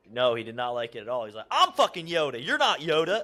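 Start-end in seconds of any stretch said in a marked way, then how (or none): 1.5-3.2 mock hard loud yelling. Retelling how Kenny yelled at a rival on the show: imitating Kenny yelling. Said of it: "Yelling at him and stuff".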